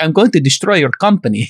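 put-on Israeli accent with Russian tinge. Retelling a scene where he turns to the dark side: imitating a Russian-Israeli amalgamated accent. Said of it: "There's my Russian, Israeli amalgamated".

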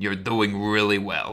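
sarcastic, mock admiring tone. Teasing a co-host after an air-quotes joke: sarcastic praise. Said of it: "You were sarcastic, weren't you?".

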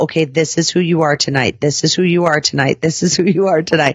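normal talking voice

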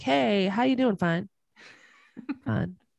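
attempted country accent. Acting out an everyday greeting with the listener, attempted country accent. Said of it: "I'm trying to use a country accent".

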